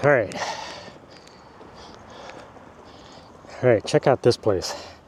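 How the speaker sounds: out of breath. Speaker filming a walk past a hedge, out of breath. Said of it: "I am out of breath".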